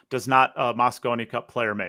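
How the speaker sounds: plain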